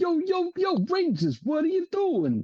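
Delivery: put-on very high-pitched Brooklyn accent. Imagining Alpha calling out to the Rangers, Alpha impression with Brooklyn accent. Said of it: "It's the accent".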